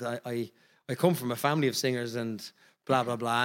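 ordinary talk

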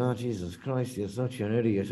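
quiet muttering. Quoting Chad Gable's remark about Riddle: Chad Gable muttering under breath. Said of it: "like practically under his breath".

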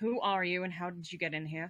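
quiet, hushed, wary and guarded. A narrator voices a character facing a stranger, quiet and wary. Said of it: "speaks more quietly but warily".

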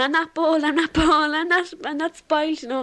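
acted scream with crying. Recalling running around the house after a hurtful comment, retelling screaming and crying. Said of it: "I ran around the house screaming, crying, going".

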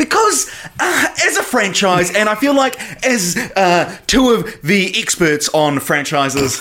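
very high, slow, drawn-out put-on voice. Answering why they talk about titles, imitating AJ. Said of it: "this is my A J impression".

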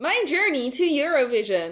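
robotic text-to-speech voice. Discussing a Eurovision entrant's vlogs, one speaker does the TikTok text-to-speech voice. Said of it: "I love doing the automatic TikTok voice".

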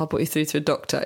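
mock-bored, uninterested put-on tone. Retelling the emergency line's reply to her call about her husband: mimicking an uninterested tone. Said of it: "in a very uninterested way".

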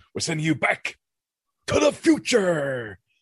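very high, swooping, over-the-top movie-style delivery. Talking about films that use their title, the speaker mimics a character's dramatic delivery. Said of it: "he says it in such a dramatic way".

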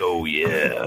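soft, hushed, breathy stage half-whisper. Joking about a dream partner, imitating the Kool-Aid Man: half-whispering Kool-Aid Man. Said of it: "whispers, and he's like".

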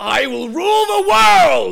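high-pitched, gravelly scream. Asked for a Plankton impression, doing a mock-angry gravelly Plankton voice. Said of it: "He's like a gravel. He's very angry".

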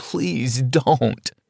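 short, pleading, begging voice. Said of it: "as I begged".

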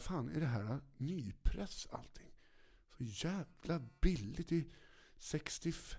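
mock slow, drawn-out, thrilled and delighted marveling. Retelling a record buyer's reaction to cheap prices: imitating a very pleased man. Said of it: "Så han var så jävla nöjd och bara".

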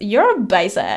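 affected, put-on European accent. You love doing her accent after watching the show, so quote her in Anna's accent from Inventing Anna. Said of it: "I love doing her accent, especially when she says".

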